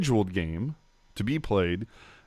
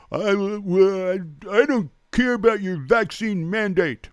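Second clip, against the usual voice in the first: sarcastic put-on voice, pitched up, stretched out; 8 semitones higher than usual. Mimicking people who dismiss the vaccine mandate, the speaker uses a mocking sarcastic voice. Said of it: "As you can tell by my sarcastic voice".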